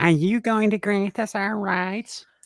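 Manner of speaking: high, slow, whining nanny voice.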